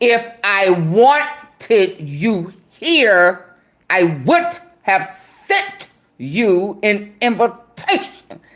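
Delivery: slow words through clenched, gritted teeth. Speaker acts out a man's remark, retelling words through gritted teeth. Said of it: "he talking through his teeth".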